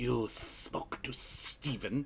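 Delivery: very slow, quiet, hissed whisper. Voicing a character's reply as he hisses back, hissing. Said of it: "he hisses back".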